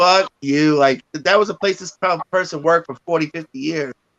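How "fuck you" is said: put-on spirit-like ghostly voice. Retelling a curse heard in the basement: imitating a spirit voice cursing. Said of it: "It was like".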